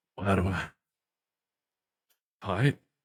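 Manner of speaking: indistinct mumbling, words run together. Voicing Rack, heard by a player after a perception check: mumbling. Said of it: "a sort of mumbling coming from Rack".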